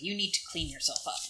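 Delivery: voice full of open disgust, reproachful. Speaking in character to Astrid in a fantasy game: saying it disgustedly.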